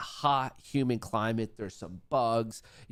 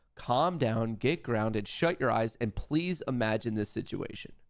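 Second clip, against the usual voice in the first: ordinary talk, nothing marked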